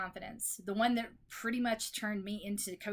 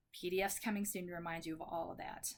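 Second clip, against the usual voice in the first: plain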